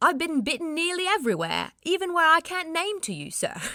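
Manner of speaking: awful put-on London accent. Reading aloud a man's first-person account in his voice: awful put-on accent. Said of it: "Sorry, that was awful".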